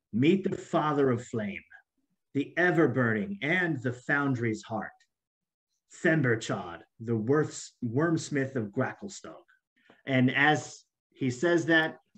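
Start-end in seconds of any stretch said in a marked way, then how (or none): 0.1-9.3 deeply reverent, worshipful proclamation. Narrator voices Gartakar introducing the dragon to the foreigners, with great reverence. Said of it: "Gartakar says with great reverence".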